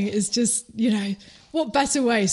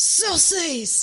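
put-on shout, higher; 7 semitones higher than usual. Retelling a dad answering his kid across a lake: imitating a dad shouting back. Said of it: "And the dad shouts back".

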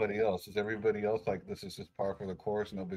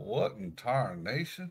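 fed-up, exasperated, at-wits'-end outburst. Voicing a character who sees something shocking: loudly exasperated in character. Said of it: "he's just gonna, like, loudly exasperate".

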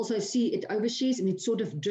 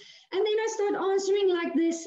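voice jumping way up to very high pitch; 11 semitones higher than usual. Explaining how a candidate's pitch shifts when lying, demonstrating raised pitch. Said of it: "when the pitch goes up".

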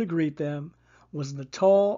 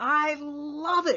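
very high pitched, thrilled, enthusiastic excited cry; 11 semitones higher than usual. Narrator reading a character's answer to a student's suggestion, cried out. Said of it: "cried Miss Bluth".

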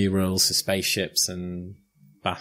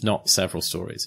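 ordinary delivery

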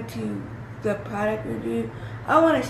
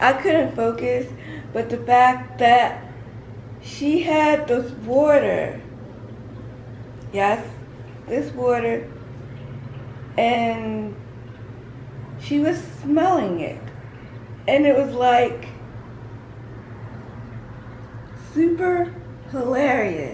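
voice cracking and breaking; 3 dB louder than usual. Telling viewers about a funny moment in a virtual workout, voice cracking. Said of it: "my voice is cracking".

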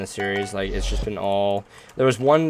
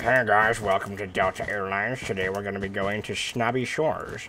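airline pilot voice over the cabin intercom; 3 dB quieter than usual. A speaker jokes he could be an airplane pilot, airline pilot intercom voice. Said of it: "I could be an airplane pilot like".

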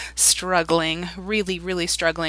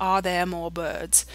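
British accent, English pronunciation; 4 dB quieter than usual. Speaker demonstrates R sounds, in a British accent. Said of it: "they all kind of sound different in the British accent".

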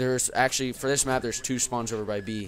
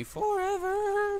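very high squeal, voice shooting up on "forever". Excited after getting a nuke, voice goes up high on 'forever'. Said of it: "I always have to, like, raise my voice up high like that".

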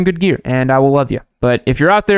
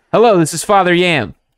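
sounds like an automated recorded voice message. Podcast host greeting a caller, sounding like an automated voice message. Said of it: "It sounded like an automated voice message".

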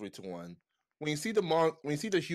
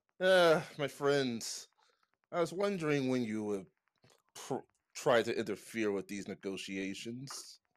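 voice sounding slightly dry; 3 semitones lower than usual. Narrating a game scene, speaking as Marvis to the players, a little dry voice. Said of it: "my voice is a little dry".

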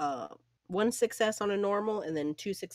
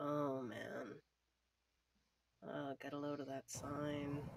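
under breath, much quieter, lower; 4 semitones lower, 13 dB quieter than usual. Recounting what you said to someone beside you, under your breath. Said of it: "just sort of under my breath".

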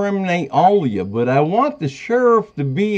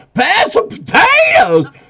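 mock loud shouting, much higher pitch; 5 dB louder than usual. Explaining why she speaks loud, acting out calling to her deaf father, retelling a loud shout. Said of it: "I speak loud naturally".

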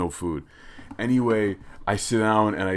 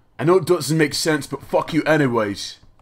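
bad put-on British accent, higher and louder; 7 semitones higher, 5 dB louder than usual.

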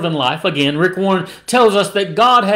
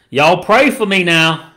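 put-on Kentucky accent. Retelling what a child said while carried out, Kentucky accent. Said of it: "he said with his Kentucky accent".

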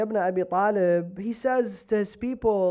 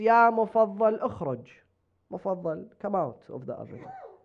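ordinary delivery

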